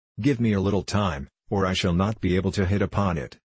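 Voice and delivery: plain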